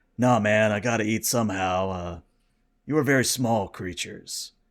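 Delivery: calm, relaxed stoner voice. Voicing a cosmic creature answering a hail: calm relaxed Jeff Bridges voice. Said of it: "a very calm, relaxed voice".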